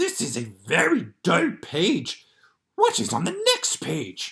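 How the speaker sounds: loud, big, bouncy, swooping, lovable furry monster voice. Reading The Monster at the End of this Book aloud, Grover's lines in a Grover voice. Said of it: "I have been working on a Grover voice".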